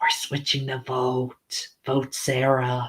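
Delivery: slow, hushed, secretive whisper. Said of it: "try and whisper".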